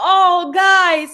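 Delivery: holding back tears. Retelling how someone reacted to a birthday surprise, imitating Mister George holding back emotion. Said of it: "trying to hold in that emotion".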